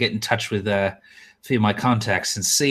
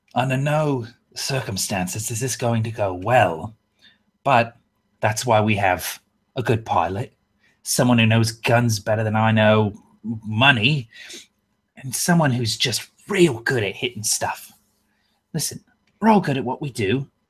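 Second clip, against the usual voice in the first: hushed, lowered voice. Game master's character pitches a risky job to the crew, dropped, lowered voice. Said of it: "and I'll kind of drop my voice".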